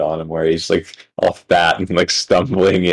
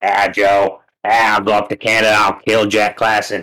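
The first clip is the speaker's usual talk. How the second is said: very slow, deliberate delivery dragged out at a crawl; 2 semitones higher than usual. Doing an impression of Joey Diaz threatening to come to Canada: Joey Diaz impression. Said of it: "that's horrific".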